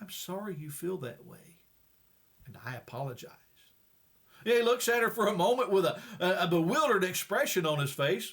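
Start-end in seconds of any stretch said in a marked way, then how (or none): 0.0-3.3 very quiet, hushed, low near-murmur. Telling a story where a wife answers her angry husband, very soft voice. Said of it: "she says in a very soft voice".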